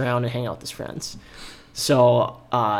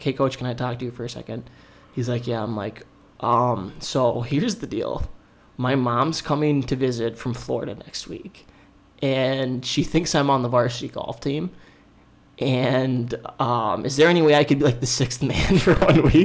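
ordinary talk, nothing marked

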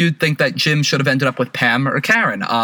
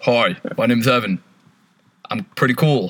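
slow, overly polite, well-mannered delivery; 3 semitones lower than usual. Doing an impression someone requested: impression of Evan. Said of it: "tell me someone to impersonate".

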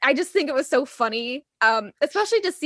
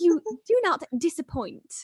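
slightly posh voice, pitched up higher; 5 semitones higher than usual. Speaker retells Alan Cumming's reaction; Alan Cumming's slightly posh voice. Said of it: "he's kind of like posh a little bit".

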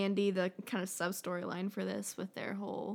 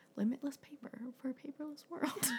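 put-on deadpan delivery, quieter; 6 semitones higher, 4 dB quieter than usual. Imagining him saying it with total conviction, imitating a deadpan delivery. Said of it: "so deadpan".

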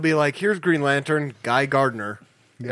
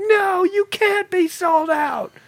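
mock very high, shrill screaming outburst; 3 dB louder than usual. Retelling a Barnes & Noble visit, the speaker acts out a lady, retelling a scream. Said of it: "she just started screaming".

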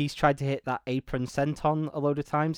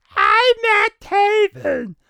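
very high, very loud, shrill botched shout; 9 dB louder than usual. Retelling a ladder-match line said into the camera: imitating Matt Taven's botched shout. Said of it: "he tried to shout it, but his voice just came out wrong".

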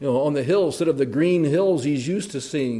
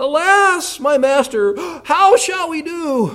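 very high, loud, frightened, panicked cry of alarm; 13 semitones higher, 8 dB louder than usual. Retelling a servant's cry to his master, acting out panic. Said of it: "Can you hear the panic?".

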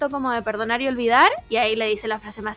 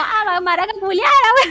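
reenacted shouting, higher and louder; 8 semitones higher, 6 dB louder than usual. Retelling a fight from a reality show: imitating people shouting insults. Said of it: "Y se gritan como".

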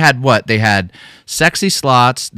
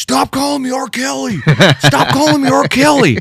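play-acted, very high, shrill screaming. Retelling what a man kept screaming at the camera: imitating someone screaming. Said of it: "screaming at the camera".

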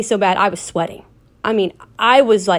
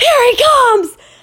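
mock very high, shrill scream of alarm; 4 dB louder than usual. Retelling how his brother screamed as he turned the corner: retelling brother's scream. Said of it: "my brother screams".

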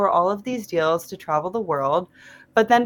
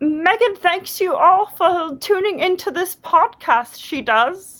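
sweet, squeaky, very high little house elf voice; 9 semitones higher than usual. On a podcast, channeling an inner sweet baby house elf: Dobby house elf voice. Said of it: "channel my inner sweet baby house elf".

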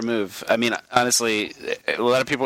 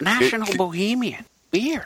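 laid-back put-on actor voice, pitched higher; 10 semitones higher than usual. Answering a request for a Baltimore reference: Owen Wilson voice. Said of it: "in an Owen Wilson voice".

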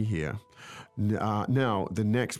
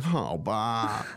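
mock reluctant, sorry-for-herself whine on "okay". Imitating a daughter who feels sorry for herself: imitating a self-pitying whine. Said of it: "that's the way she'll be 可 怜".

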